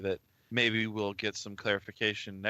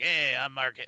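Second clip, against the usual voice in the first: put-on rough, gruff old-man voice; 4 semitones higher, 3 dB louder than usual. Showing how Mark Hamill sounds when interviewed now, use a gruff old Mark Hamill voice. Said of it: "he's got this kind of gruff, you know, voice".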